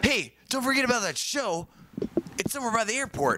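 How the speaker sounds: very high-pitched, friendly, casual voice. Repeating an impression of Damon about a show by the airport. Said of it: "That's my impression of Damon".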